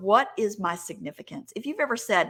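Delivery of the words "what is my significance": ordinary delivery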